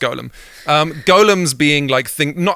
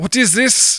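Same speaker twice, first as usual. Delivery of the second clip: put-on Nordic accent, pitched up; 7 semitones higher than usual. In a scene asking about dragons and incriminating evidence, attempted Nordic accent. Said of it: "I'm trying to do Nordic".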